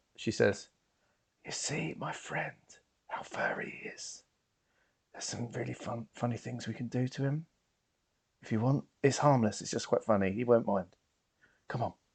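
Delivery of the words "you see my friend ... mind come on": hushed, secretive whisper. In a tabletop game scene, a character whispers to her friend. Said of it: "she whispers to her".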